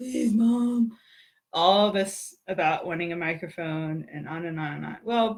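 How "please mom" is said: put-on high, childlike pleading, begging whine. Retelling a son begging for a microphone: imitating a kid's begging voice. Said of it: "that voice that kids have".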